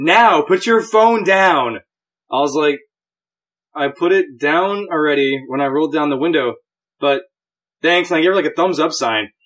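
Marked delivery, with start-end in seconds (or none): 0.0-1.8 slow yell, dragged out. Recounting a woman yelling at her through a car window, retelling her yell. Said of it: "while she's yelling at me".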